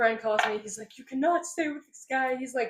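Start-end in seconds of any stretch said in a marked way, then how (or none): 1.0-2.4 pleading through tears, crying. Retelling a friend's call from back then: imitating someone crying. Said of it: "crying and all that".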